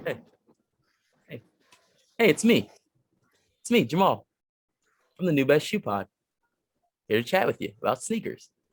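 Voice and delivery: easy, friendly, calm nice-guy voice. Greeting listeners of the new best shoe pod to chat about sneakers, in a calm nice-guy voice. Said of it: "calm voice today?".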